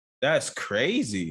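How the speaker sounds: slow, stunned, drawn-out reaction.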